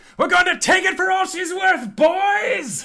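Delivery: very loud, high shout through laughter. Voicing a man clinging to a rope, pointing at the ship: laughing very loudly. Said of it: "laughing very loudly".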